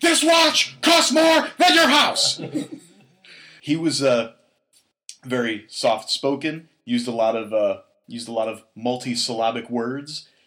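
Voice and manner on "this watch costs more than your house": mock scream, much higher, louder, faster. Quoting what a soft-spoken man once screamed, imitating someone screaming.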